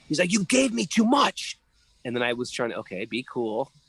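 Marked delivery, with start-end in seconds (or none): 0.3-1.6 mock, very high, chastising shout. Retelling how an older monk chastised him, imitating the monk yelling. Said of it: "He starts yelling at me".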